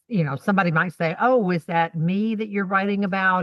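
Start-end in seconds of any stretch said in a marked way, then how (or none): none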